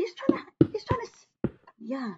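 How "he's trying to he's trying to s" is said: much higher-pitched tiny little voice. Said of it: "little bucket voice".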